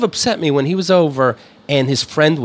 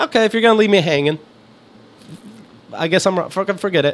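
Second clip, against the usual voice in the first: plain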